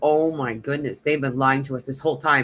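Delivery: normal talking voice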